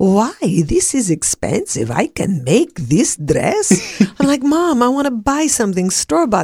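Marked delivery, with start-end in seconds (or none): 0.0-4.0 put-on Greek accent, slow and swooping. Retelling what her mother said while shopping, imitating mom's Greek accent. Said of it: "she had a Greek accent and she'd say".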